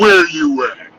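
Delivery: very deep, low, sunken voice. Retelling the partner's answer on the phone, imitating a deep voice. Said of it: "her voice went deeper than mine".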